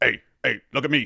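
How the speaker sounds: wild, manic, crazy-energy ghoul voice. Speaker recalling childhood joking with a best friend, doing a Beetlejuice voice. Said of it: "the crazy energy, the voice".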